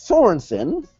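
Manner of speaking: sudden squeaky, high voice crack on one word. Announcing the next match in a review: voice cracking. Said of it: "my voice cracked".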